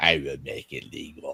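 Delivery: very low, hushed, soft villain voice. Quoting a villain to make a point about corporates, do an Emperor Palpatine voice. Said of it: "I do a good Emperor Palpatine voice".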